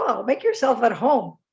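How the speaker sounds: mock, very sarcastic, insincere tone. Retelling a remark to a defiant peacekeeper with his feet up: imitating own sarcastic remark. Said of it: "as I was very sarcastic".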